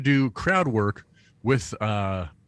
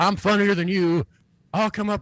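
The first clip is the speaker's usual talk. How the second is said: imitated mock yell, much higher pitch; 9 semitones higher than usual. Recounting what a guy in a crowded room yelled, retelling a guy's yell. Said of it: "he yells".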